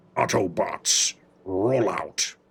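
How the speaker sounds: very deep, very low giant robot leader voice. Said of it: "I can go down here if I really want to".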